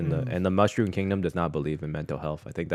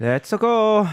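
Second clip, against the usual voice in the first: put-on sad plumber voice, higher and louder; 10 dB louder than usual. Showing how to do a Luigi impression: Luigi impression as sad Mario. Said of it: "you just do a very sad Mario, like a depressed Mario".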